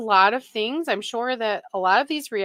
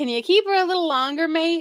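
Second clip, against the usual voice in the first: fake, poorly done, pitched-up Australian accent; 6 semitones higher than usual. Retelling what Tony asked the hospital: bad Australian accent. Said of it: "I can't do an Australian accent".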